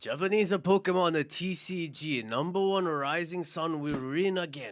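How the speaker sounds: loud put-on Japanese-accented announcer voice. Doing the sponsor announcement into the camera for the podcast: japanese accent. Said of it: "you just did an accent".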